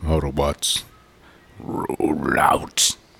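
whispered, breathy, only a light hint of character. Saying the catchphrase when asked for it: a bit like Optimus Prime. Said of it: "It's kinda like Optimus Prime a little bit".

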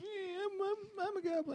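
very high, very slow, drawn-out whiny drawl. Explaining it was the other goblin, not the one asked about: mock-whiny goblin voice. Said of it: "Because he's whiny".

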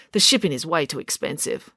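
plain reading voice

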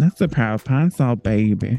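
put-on sassy voice.

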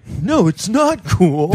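high, slow, exaggerated mock scolding.

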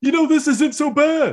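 very high, blaring, obnoxiously loud voice, acted. Recounting a silent bus scene from the episodes, obnoxiously loud Bulkhead voice. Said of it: "in it like an obnoxiously loud voice".

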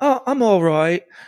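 put-on unhurried, easy-going Australian accent. Retelling how a woman answered a greeting, in an australian accent. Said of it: "she has this Australian accent".

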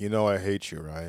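flat, monotone delivery. Imitating a TV character who hates another character: monotone Gilfoyle voice. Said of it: "super, um, monotone".

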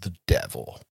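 eerie, creepy, breathy whisper. Retelling a movie scene where a character looks up: imitating a creepy delivery. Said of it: "creepily says".

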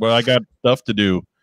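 plain

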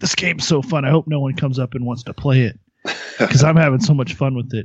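stagey fake mutter to oneself, meant to be overheard. Acting out playing a game at work to draw customers: pretend muttering under breath. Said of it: "muttering things under your breath".

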